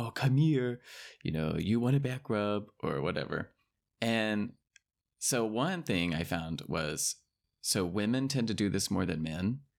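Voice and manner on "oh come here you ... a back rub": weird, over-the-top, exaggerated baby talk as to a dog. Explaining how people talk to dogs, demonstrating an exaggerated voice for a dog. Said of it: "this weird, exaggerated, like, you know, you're talking to the dog".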